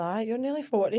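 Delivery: ordinary delivery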